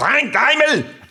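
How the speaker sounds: very high, shrill, all-angry tone. Guessing how a man might say the name, mock-angry 'Frank Daimel'. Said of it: "like all angry".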